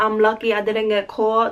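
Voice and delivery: ordinary talk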